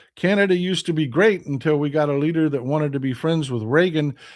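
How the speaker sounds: ordinary talk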